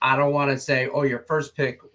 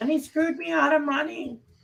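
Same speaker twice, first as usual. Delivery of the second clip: mock complaining voice, higher. Imitating a listener who complains about a pick: imitating listeners complaining. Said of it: "That's how you all sound too".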